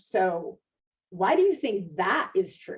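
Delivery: over-the-top, swooping, exaggerated sarcastic tone. Showing how not to question a patient: exaggerated sarcastic questioning. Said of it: "now I'm being sarcastic and I'm exaggerating it".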